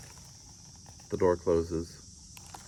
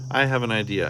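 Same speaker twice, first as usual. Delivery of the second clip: plain reading voice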